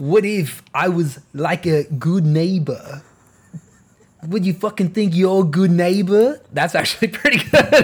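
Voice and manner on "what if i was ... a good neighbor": put-on Austrian strongman accent mixed with Boston. Asked to say something in a mixed accent, answer in an Arnold Schwarzenegger accent, like Walken from Boston. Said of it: "say something with an Arnold Schwarzenegger accent".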